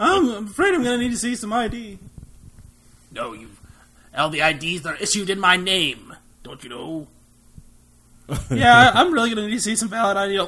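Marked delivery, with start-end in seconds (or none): 3.1-7.1 put-on sinister evil emperor voice. Playing the Emperor being asked for ID, the speaker answers: Emperor Palpatine voice. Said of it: "That's my Emperor Palpatine".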